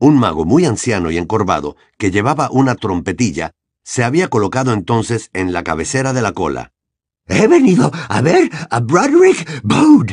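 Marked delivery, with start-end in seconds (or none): 7.3-10.1 nearly out of breath, pitched up. Narrating, a wizard at the head of the queue addresses the receptionist witch, almost breathless. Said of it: "casi sin aliento".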